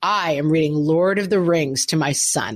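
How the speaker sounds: full projected reading voice. Imitating a plane passenger reading to his young son, in full voice. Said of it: "in full voice".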